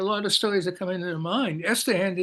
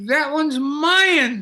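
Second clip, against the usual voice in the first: mock childish, high, loud screech, mine drawn out; 7 semitones higher, 6 dB louder than usual. Recounting screaming as a kid over another boy's presents; retelling a childhood scream. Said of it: "start screaming".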